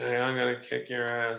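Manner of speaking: level, toneless delivery. Asking a guy if he'd really talk like this in a real fight, mock monotone. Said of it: "he basically sounded very monotone".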